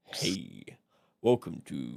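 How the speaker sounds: very deep, low, sultry, sexy radio DJ voice.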